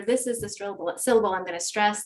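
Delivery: ordinary delivery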